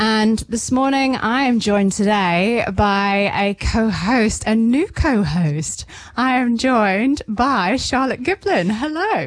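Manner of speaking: happy, smiling tone. A radio host introduces her new co-host on air, with a smiling voice. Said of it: "I can hear the smile in your voice".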